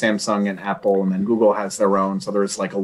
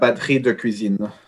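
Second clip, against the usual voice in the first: exaggerated, over-the-top French accent and pronunciation. Asked to say a french phrase in super french, exaggerated french accent. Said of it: "Say it in super French".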